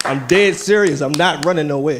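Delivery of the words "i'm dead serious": loud, authoritative declaring tone. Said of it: "I gotta say it with authority".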